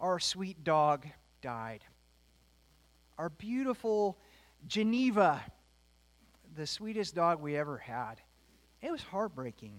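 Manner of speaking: voice strained, fighting to keep from crying. Telling the listeners that the family dog died, holding back tears. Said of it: "I'll see if I can get through this without crying".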